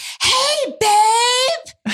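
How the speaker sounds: mock very high scream, "babe" drawn out. Retelling what she said in the bathroom, retelling her scream. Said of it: "she just screams".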